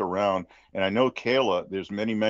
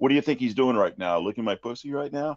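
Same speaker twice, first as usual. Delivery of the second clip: put-on sarcastic, demeaning taunt, higher; 3 semitones higher than usual. Retelling what Ramona would say to him: imitating Ramona's sarcastic taunt. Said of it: "in a sarcastic way and, and trying to kind of, uh, demean him".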